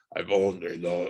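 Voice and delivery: deepest possible growly, wolf-like voice. Describing how he said a line, imitating a very low growl. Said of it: "he says it in the lowest growly voice ever".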